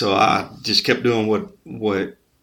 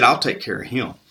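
ordinary talk

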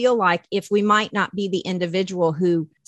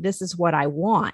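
ordinary talk

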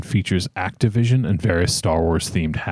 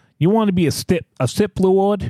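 fake, poorly done Boston accent, much higher; 13 semitones higher than usual. Among friends, repeating the Sip Lord question in a bad Boston accent. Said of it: "He has to have a fucking Boston accent".

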